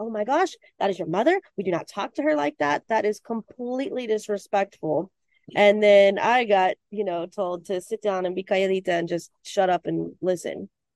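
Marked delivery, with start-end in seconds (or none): 0.0-5.1 put-on, shocked, appalled, scolding tone. Retelling own reaction to the outburst at dinner: imitating own appalled scolding. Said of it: "appalled and was like".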